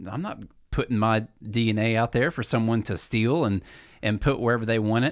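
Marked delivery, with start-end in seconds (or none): none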